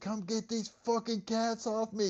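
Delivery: play-acted shrieking scream, very high pitched. Retelling a brother screaming out the front door: imitating brother screaming. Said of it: "my brother was screaming".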